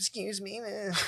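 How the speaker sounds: timid, apologetic little voice. Mocking the soft guys a coworker expected to be tough: imitating a soft, meek guy. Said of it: "pussy ass fucking dudes just being".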